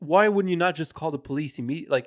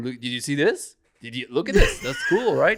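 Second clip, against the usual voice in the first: put-on casual, unbothered, nonchalant tone; 3 semitones lower than usual. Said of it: "you're just so casual about it".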